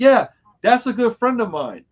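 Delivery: play-acted, shrill, very loud, high-pitched far-carrying call. Recounting talking to a cop, he acts out what he said, real loud. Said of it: "Like real loud".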